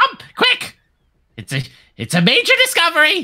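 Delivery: squeaky, very high goblin voice. A game master's goblin grabs a player and pulls them outside, goblin voice. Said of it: "those different goblin voices I have".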